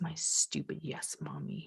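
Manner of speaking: muttering under the breath. A mother retells what her child said while putting on pajamas, retelling a mutter under breath. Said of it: "under his breath".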